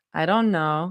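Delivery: warm, low-set voice. Rumi answers Zoe while watching a video on Zoe's phone; low warm murmur. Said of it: "she murmured, her voice low and warm".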